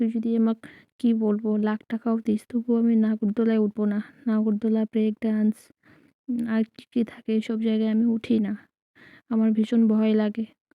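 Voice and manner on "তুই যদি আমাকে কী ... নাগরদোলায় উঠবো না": normal talking voice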